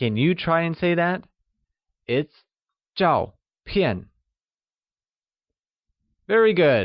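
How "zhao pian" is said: falling tone on both zhao and pian. Teaching the word for photo for learners to repeat: falling tone on zhao and pian. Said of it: "both zhao and pian are pronounced with a falling tone".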